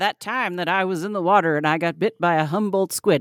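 put-on creaky old-timer storyteller voice. Speaker acts out a 75-year-old man telling his story, in an old man voice. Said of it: "that's my old man voice".

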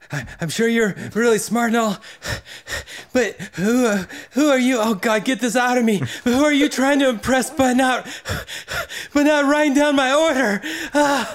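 strained, effortful voice. Reading a game card aloud while acting it out: as if giving birth. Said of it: "Giving birth".

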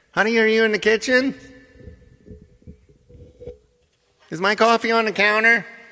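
very high, loud, pointed passive-aggressive voice. Speaker showing how his wife sounds in the morning, imitating his wife. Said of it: "he's so passive-aggressive".

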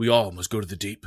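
said softly under the breath, quiet and hushed. A player in a tabletop game speaks in character while attacking: said quietly. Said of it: "I'm just going to say quietly".

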